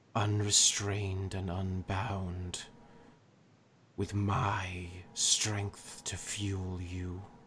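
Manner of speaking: echoing, chorus-like voice, as if from many mouths. A dark entity offers its strength to a mortal: voice echoing from many mouths. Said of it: "we are merely the [name]. / As he says that, / To be my hand in your world. / You see, as he's speaking, that voice seems to appear just everywhere, and it's almost like different mouths are saying it".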